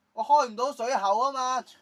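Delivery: high, loud, exasperated shout.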